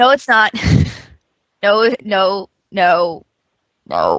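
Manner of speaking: deep voice, muffled as if behind hands. Disagreeing with the other speaker, mouth covered by hands: muffled, deeper voice. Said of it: "Did your voice just get did did, did your voice get just get deep".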